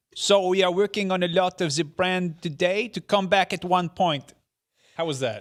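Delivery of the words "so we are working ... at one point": put-on very loud, booming, slow French accent. Reading a quote from Yves Guillemot aloud, imitating Yves Guillemot's French accent. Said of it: "You have to do the accent".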